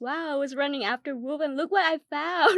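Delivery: mock loud exclamation dripping with sarcasm. Retelling the same character's sarcastic line about finding fake money: imitating a sarcastic tone. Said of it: "he was being so sarcastic".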